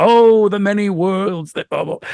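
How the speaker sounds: booming narrator voice. A writer demonstrates the narrator voice wanted for a comic: booming, larger-than-life narrator voice. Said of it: "booming, larger than life narrator voice".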